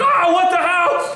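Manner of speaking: shrill, high, very slow, stretched-out scream. Voicing a store manager reacting to an attack: screaming. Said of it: "now the manager is screaming".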